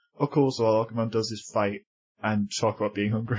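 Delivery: ordinary delivery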